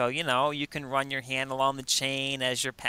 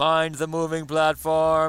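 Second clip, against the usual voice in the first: put-on super booming voice, much louder; 3 semitones higher, 5 dB louder than usual. Retelling a man's repeated comical phrase, in a super booming voice. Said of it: "he was doing this super booming voice".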